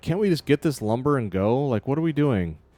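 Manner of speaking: scared, freaked-out, nervous voice. Voicing a deckhand who wants to leave quickly: freaked-out deckhand. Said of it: "this guy looks, like, kinda freaked out".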